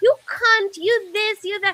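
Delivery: acted abusive rant. Retelling how a customer unloaded on the speaker, retelling his abusive tirade. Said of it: "he just unloads on me".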